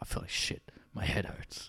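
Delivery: soft, whispered film noir narration voice. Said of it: "we should narrate our day-to-day life like that".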